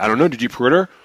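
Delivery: put-on snotty attitude. Retelling how store clerks answered a question: imitating a clerk's attitude. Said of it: "give me this fucking attitude".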